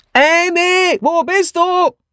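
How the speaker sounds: very high booming call, one name stretched out. A narrator reads Miss Hinchliffe calling out to Amy, in her booming voice. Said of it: "ließ ihre Stentor-Stimme erschallen".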